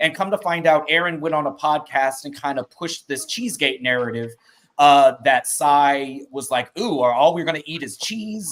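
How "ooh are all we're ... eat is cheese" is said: put-on mock rude, disrespectful tone. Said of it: "made it seem like [name] came into her house very disrespectfully".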